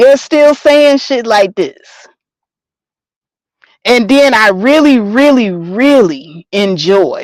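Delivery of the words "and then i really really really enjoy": slow, drawn-out, sarcastic, insincere delight. Complaining about online conversations, saying it is enjoyable: sarcastic. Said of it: "I'm being sarcastic when I say this".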